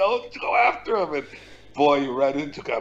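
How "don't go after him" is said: put-on, very high screaming. Retelling what he shouted at a fighter from the corner: imitating himself screaming. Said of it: "and I'm screaming".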